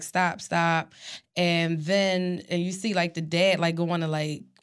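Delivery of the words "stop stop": ordinary delivery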